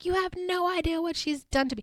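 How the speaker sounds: high-pitched, hysterical screaming outburst. A speaker retells a fight where Kyle held Taylor back, imitating Taylor screaming hysterically. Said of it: "Taylor's screaming and she's like".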